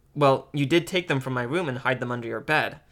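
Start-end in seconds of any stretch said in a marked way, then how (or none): none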